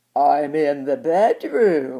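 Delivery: odd, strange, quavering, wobbly wolf voice. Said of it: "replied the Wolf in a strange, wobbly voice".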